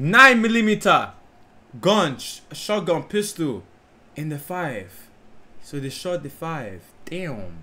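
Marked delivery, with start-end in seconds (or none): 0.0-4.9 put-on Nigerian English accent. Unsure how to say millimeter, switching to a Nigerian accent. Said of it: "Let me use my Nigerian accent".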